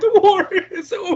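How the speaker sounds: put-on high, loud scream.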